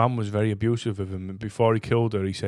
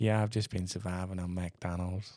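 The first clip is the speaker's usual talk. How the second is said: put-on flat-voiced delivery, lower and quieter; 3 semitones lower, 10 dB quieter than usual. Retelling home footage of Jeffrey Dahmer talking to his dad: imitating Jeffrey Dahmer. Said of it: "and he's like".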